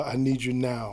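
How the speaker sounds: normal talking voice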